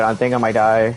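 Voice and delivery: slightly panicked, a little rattled, mild panic. Apologizing to viewers mid-game while panicking a little. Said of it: "Sorry if I'm panicking a little bit".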